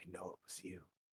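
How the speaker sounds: barely-there whisper, muttered low under the breath. Voicing a character who accuses another player, muttered under his breath. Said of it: "just under his breath".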